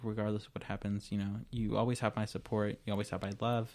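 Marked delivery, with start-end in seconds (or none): none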